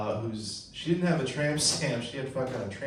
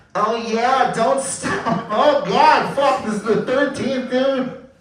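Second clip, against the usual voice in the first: put-on woman's voice, higher and louder; 12 semitones higher, 9 dB louder than usual. Doing a joke impression for the audience: train impression. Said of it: "I have a train impression for you guys".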